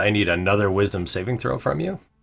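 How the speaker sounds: ordinary talk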